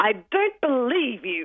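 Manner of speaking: mock very cross little child voice, high and swooping. Retelling a little girl's reply to a boy's apology, mock-cross. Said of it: "said very crossly".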